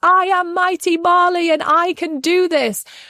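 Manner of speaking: put-on very high, drawn-out shout at full volume. Recalling a girl learning to ride her bike, retelling her shouting. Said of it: "shouting at the top of her lungs".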